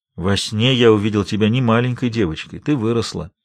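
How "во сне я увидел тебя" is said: plain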